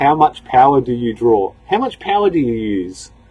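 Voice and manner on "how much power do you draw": ordinary talk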